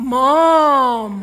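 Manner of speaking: put-on very low, flat, lifeless drone. Listing irritating habits, mimicking someone's flat monotone. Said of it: "that monotone voice".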